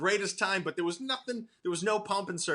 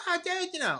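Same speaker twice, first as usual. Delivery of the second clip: very high-pitched voice; 13 semitones higher than usual. Retelling texts from Burr after a Sydney visit: Burr voice. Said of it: "but I do his voice".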